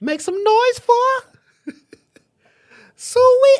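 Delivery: very high, loud, belted hype call. Trying to copy a movie character's line: high-pitched Sweetness voice. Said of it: "I can't even do it that high".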